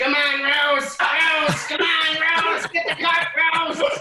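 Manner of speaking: mock repeated yelling, very high and loud. Describing a man coaxing his pig rose toward treats: retelling a man's yell. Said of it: "and then the guy just yells".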